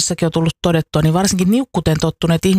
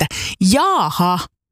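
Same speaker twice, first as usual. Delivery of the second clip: emphatic, forceful, stressed, mildly indignant tone. After a music track, the speaker demonstrates the remark: emphatic, slightly indignant. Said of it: "painokkaasti ja vähän närkästyneesti".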